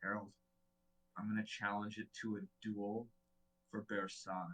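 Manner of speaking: soft, hushed, secretive half-whisper. Casting a message while lying face down on the ground: half-whispering in character. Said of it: "and I just whisper".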